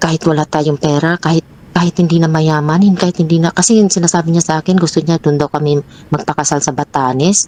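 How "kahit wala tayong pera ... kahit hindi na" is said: normal talking voice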